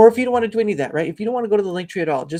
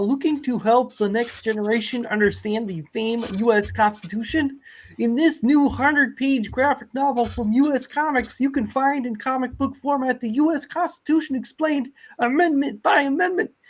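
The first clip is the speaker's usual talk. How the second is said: put-on high-pitched cartoon frog puppet voice; 5 semitones higher than usual. Reading a graphic novel ad to chat as a try at a Kermit impression. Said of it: "my best Kermit impression".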